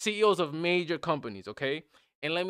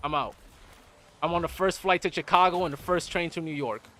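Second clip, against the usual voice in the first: ordinary talk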